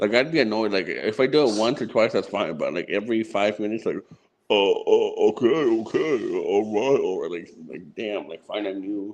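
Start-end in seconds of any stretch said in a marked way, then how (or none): 4.5-7.0 very slow, drawn-out, stretched delivery. Complaining about an imitation that is repeated too often: imitating Gangster's way of talking. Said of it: "imitates you the way you talk".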